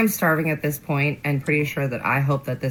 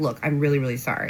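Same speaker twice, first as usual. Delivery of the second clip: ordinary delivery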